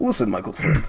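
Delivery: low, soft, put-on Russian accent. Voicing a game character who takes the player aside, in a russian accent. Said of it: "Very Russian there".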